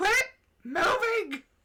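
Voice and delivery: put-on tipsy, befuddled voice. Imagining the character trying to catch his moving bed: drunk Howl voice. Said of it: "drunkenly trying to, like, catch his bed".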